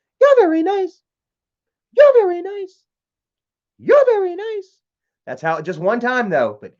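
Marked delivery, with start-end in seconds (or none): 0.2-4.8 put-on small childlike little girl voice, very high. Retelling a voice heard on a ghost-hunting EVP box: imitating a little girl's voice. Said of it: "It was a little girl, and she goes".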